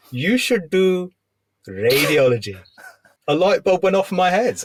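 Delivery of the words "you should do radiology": put-on Indian accent. Retelling what the reg said at the end of the night: imitating an Indian accent. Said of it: "I'll do an accent".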